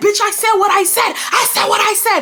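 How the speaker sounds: high, loud, furious shouting.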